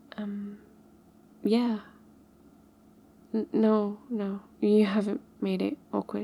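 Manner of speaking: shy, bashful, timid. Answering whether cooking together is awkward: shy.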